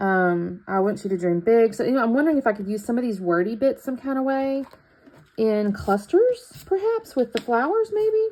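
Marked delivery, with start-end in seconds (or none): 2.0-8.3 uncertain tone, lilt rising on maybe. Wondering aloud about using the word stickers with flowers: questioning rising tone. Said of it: "with a question mark in my voice".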